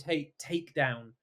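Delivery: ordinary delivery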